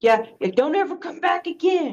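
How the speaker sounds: high-pitched, yelled delivery. Voicing a raging character as goblins flee: yelling in character. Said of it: "she's just gonna yell".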